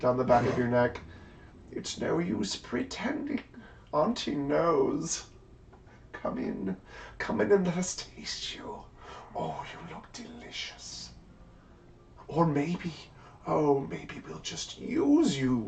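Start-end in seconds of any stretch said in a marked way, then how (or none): 1.7-15.7 whispered ugly, hideous witch voice. Voicing a hideous witch who runs a fingernail down a neck: hideous hag voice. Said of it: "she is hideous".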